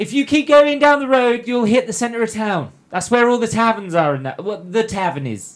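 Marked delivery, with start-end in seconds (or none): 0.0-4.1 loud, high-pitched yell. Voicing a trader who turns back to call out directions: shouting. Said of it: "and he shouts".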